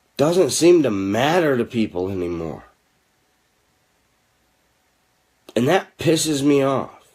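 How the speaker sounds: speaking quietly and calmly, hushed voice. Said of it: "I'm gonna try to say this quietly and calmly now".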